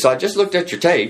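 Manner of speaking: Texas drawl, pitched very high. Retelling a phone call offering a job: imitating Monty Young's Texas drawl. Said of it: "this, you know, Texas drawl".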